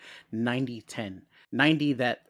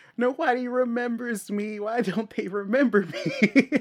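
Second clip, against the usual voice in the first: very high, slow, drawn-out, louder wail; 11 semitones higher, 5 dB louder than usual. Retelling a scene after the others forgot her: imitating Chris Ellen freaking out. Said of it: "the freak out from Chris Ellen".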